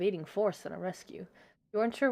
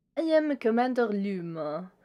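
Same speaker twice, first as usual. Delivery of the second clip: loud, proud put-on French accent, one word drawn out; 3 semitones higher, 5 dB louder than usual. Game master voices the commander stopping the crew; french accent. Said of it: "Why did I give him a French accent?".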